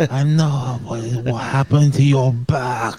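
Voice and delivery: slow, deliberate wrestler's voice leaning on each word. Quoting what a wrestler said to a rival: Shinsuke Nakamura impression. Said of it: "That's what he said".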